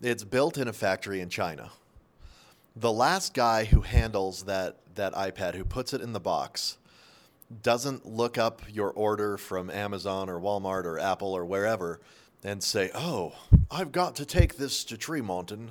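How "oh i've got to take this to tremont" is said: put-on British accent. Voicing the chinese factory worker who boxes the ipad order: british accent. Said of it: "the Chinese guy has a British accent".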